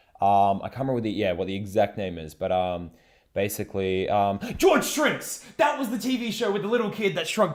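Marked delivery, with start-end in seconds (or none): 4.6-5.5 sudden loud, very high, excited outburst. Suddenly remembering a TV show's name mid-talk: sudden loud outburst. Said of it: "that large outburst".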